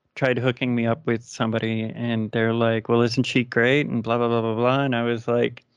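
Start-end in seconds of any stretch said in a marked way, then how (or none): none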